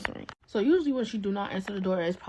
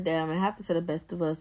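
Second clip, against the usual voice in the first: ordinary delivery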